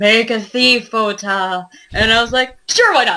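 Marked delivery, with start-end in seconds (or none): 0.0-1.7 silky, smooth, very slow, drawn-out voice. Recalling a fellow player's suggestion during a game, imitating Jonathan's smooth voice. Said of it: "Jonathan in his smooth voice".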